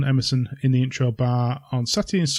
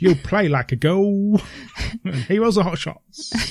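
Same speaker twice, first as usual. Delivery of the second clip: put-on southern English London accent, pitched up; 6 semitones higher than usual. Listing the exhibition's subject areas, in a put-on London accent. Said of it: "Is that your southern accent again?".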